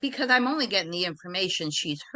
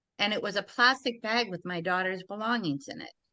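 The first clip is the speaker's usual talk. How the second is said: ordinary talk, nothing marked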